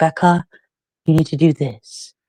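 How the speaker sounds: put-on gentle, calm, soothing, coaxing voice. Retelling how someone told you what you needed to do, imitating a calming, soothing, grooming voice. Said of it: "In this calming, soothing, grooming voice".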